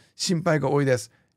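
plain

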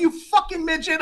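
acted shrill screaming, pitched very high. Retelling a traffic fight, the speaker re-enacts retelling screaming at someone. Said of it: "I'm screaming at him".

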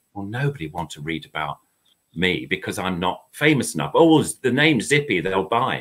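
ordinary talk

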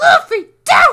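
high, loud desperate shout.

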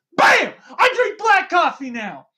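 very high, swooping, excited bursting delivery. Excited, imagining bursting into someone's house to announce it: bursting in excitedly. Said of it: "burst into somebody's house right now and be like".

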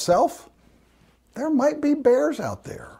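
put-on scared child voice, high, pitch swinging widely.

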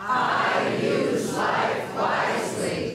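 breathy whisper with personal authority. Leading a participant through an affirmation, saying it with authority. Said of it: "say this with authority".

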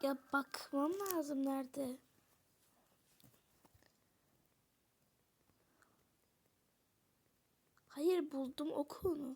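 hushed, overexcited, overwhelmed voice on the verge of tears. Streamer who just found a YouTuber's account, about to cry from excitement. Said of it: "ağlayacağım".

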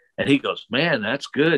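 ordinary talk

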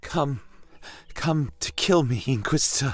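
trembling, unsteady, high-pitched voice. A woman facing the inquisitor speaks to him, asking shakily. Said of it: "she asked shakily".

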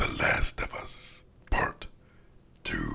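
monster voice in a whisper. Opening a YouTube gaming video, naming the game: Venom impression. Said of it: "That's my Venom impression".

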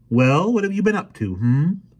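very high, loud, probing suspicious tone. A mother questions her son at the family dinner table, suspicious. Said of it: "she said suspiciously".

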